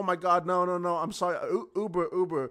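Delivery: put-on tipsy, drunk voice, fumbling and tripping over words. Retelling opening a stranger's car door while drunk: retelling own drunk apology. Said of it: "And I was drunk. I was like".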